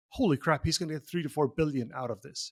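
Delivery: ordinary delivery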